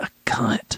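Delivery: acted muttering under breath. Retelling what a grandmother said in the kitchen: imitating someone muttering under her breath. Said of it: "under her breath".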